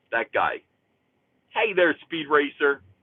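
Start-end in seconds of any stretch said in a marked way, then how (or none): 1.5-2.7 put-on cartoon frog voice with Philly accent, pitched higher. Imagining the comedian voicing a cartoon frog: Johnny Brennan as Cyberfrog, Philly accent. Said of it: "do the voice of Cyberfrog".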